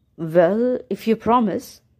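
ordinary delivery

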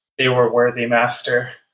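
whispering as if dying. Voicing a defeated enemy character as she dies: dying whisper. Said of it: "you hear her whisper".

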